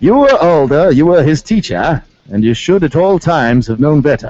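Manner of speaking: put-on English accent. Hosts quote a judge's remarks to a defendant in a put-on english accent. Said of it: "We must say this in an English voice".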